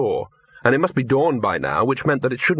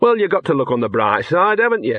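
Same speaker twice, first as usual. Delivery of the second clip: scornful, sneering delivery; 4 semitones higher, 3 dB louder than usual. The dog answers his companion in a lost underground tomb, sneering. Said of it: "sneered the dog".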